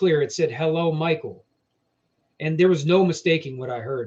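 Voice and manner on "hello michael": mock rough robotic voice. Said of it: "it was rough, robotic voice".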